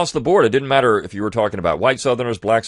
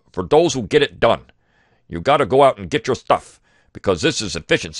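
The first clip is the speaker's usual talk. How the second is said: put-on Midwestern accent, radio commercial style read. Quoting the announcer of a local radio commercial, in a Midwestern accent. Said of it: "this guy that comes on in a Midwestern accent".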